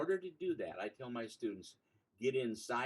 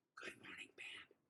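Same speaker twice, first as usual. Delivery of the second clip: forceful, projected stage whisper, very quiet. A teacher demonstrates greeting the band, in a shouted whisper. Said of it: "I'm going to shout at them a whisper like this".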